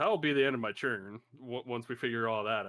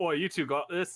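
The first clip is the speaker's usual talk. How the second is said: put-on unplanned British accent slipping in, sudden, pitched up; 7 semitones higher, 4 dB louder than usual. Player telling two guards they have this, in a sudden british accent. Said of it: "I don't know why I'm British all of a sudden".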